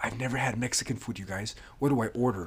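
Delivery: nervous confiding half-whisper, very quiet. Retelling how a friend leaned in at a restaurant menu: imitating someone half-whispering. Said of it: "he whispers to Tom and I".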